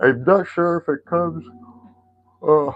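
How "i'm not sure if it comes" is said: talking through a yawn, higher. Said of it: "sorry for the yawning there".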